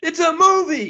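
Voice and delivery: mock yelling. Retelling yelling at the TV during a movie: retelling own yelling. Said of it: "And I'm yelling at the T V".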